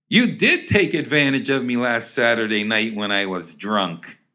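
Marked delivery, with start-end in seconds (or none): none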